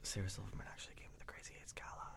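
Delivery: hushed, quick conspiratorial whisper.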